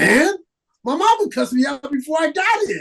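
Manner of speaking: defiant shout.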